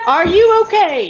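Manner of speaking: high, loud shout carrying far. Calling out to a distant figure in character, shouting. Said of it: "thank you for shouting right in my ear".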